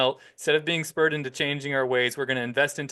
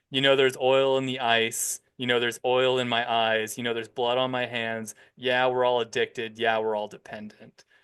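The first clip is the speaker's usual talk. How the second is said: plain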